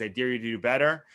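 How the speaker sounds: normal talking voice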